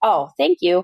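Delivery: put-on curt, sharp, jumpy, startled delivery. Speaker retells answering a stranger after being startled, retelling a sharp reply. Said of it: "I responded kind of sharply".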